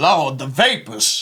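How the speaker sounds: gospel preacher voice, preaching style. Describing a favorite robot, the preacher, quoting it in a gospel preacher voice. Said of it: "really like just gospel like".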